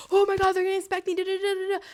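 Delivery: high, loud, panicky, freaking-out babbling blurt. Retelling seeing police come by a campus in India, mock panic. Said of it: "I'm freaking out".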